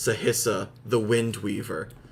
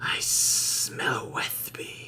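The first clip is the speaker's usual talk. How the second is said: close, hushed whisper; 5 dB quieter than usual. Voicing a character leaning down to someone's ear: whispering. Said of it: "lean down and whisper into Dreadmaw's scaly ears".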